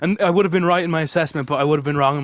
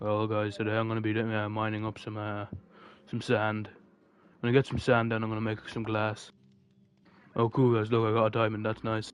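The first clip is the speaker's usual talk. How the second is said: very quiet, hushed, flat, unexcited deadpan monotone; 5 semitones lower, 10 dB quieter than usual. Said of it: "I'm gonna play this stream the rest, the rest thing like Moist Critical".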